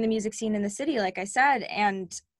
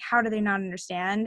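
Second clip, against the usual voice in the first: normal talking voice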